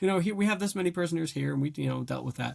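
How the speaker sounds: breezy officer voice, high and fast.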